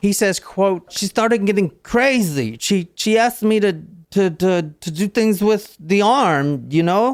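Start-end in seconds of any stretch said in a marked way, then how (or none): 0.9-7.1 put-on thick Cuban accent, pitched up. Quoting the suspect from the interrogation: imitating Fidel's thick accent. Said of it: "Fidel's got a very thick accent".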